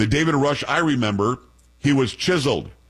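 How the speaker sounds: usual speaking voice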